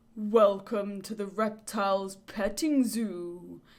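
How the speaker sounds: deep, slow, echoing voice. Reading a story, voice someone greeting the trapped listener from the darkness: deep echoing voice. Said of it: "a deep voice echoes through the darkness".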